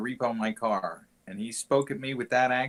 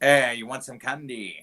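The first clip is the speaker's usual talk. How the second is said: put-on generic British accent; 4 dB louder than usual. Imagining a stranger in a car offering candy, in a british or scottish accent. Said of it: "like British or Scottish or something like that".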